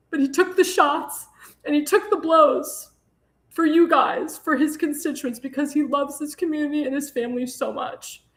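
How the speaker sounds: speaking through tears. Speaking to supporters about a man's hard work, crying while talking. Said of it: "I'm crying because".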